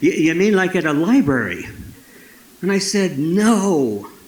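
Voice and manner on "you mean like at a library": put-on plain Canadian-accented speech. Retelling what a guy asked when the speaker sought storytelling, in a Canadian accent. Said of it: "the guy said in his Canadian accent".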